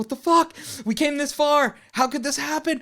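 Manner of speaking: high, loud, panicked, freaked-out yelling.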